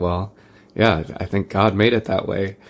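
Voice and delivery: offhand aside, half to herself. Retelling what mom would say in reply: imitating mom muttering under her breath. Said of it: "she would kind of say under her breath".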